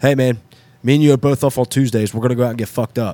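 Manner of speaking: put-on straight-faced, flat, emotionless, dead-serious monotone. Retelling what a friend said to him: imitating a dead serious deadpan. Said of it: "just straight face, dead serious, no emotion, nothing".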